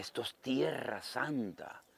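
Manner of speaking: very slow, dragged-out, slow-motion speech. A pastor retells what a church sister told him, imitating slow-motion speech. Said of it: "hablaba así despacito, en cámara lenta".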